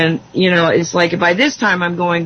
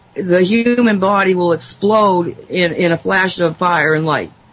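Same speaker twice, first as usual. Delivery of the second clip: ordinary delivery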